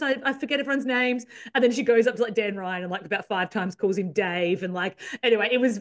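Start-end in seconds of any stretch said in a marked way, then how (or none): 0.0-1.3 anxious, rattled, nervous, flustered voice. Retelling a woman flustered while interviewing players: imitating nervous fluster. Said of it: "I'm so nervous".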